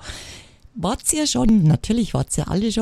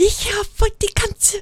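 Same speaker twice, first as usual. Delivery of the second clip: loud shouted voice. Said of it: "Schreit sie durch den Laden".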